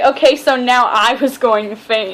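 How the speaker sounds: ordinary delivery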